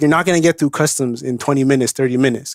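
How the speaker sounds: ordinary delivery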